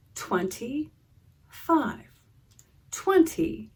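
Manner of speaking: slow, drawn-out, each word stretched into parts. Demonstrating how slowing down lets you hear tens and ones, slow, drawn-out counting. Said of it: "Let's say the number more slowly".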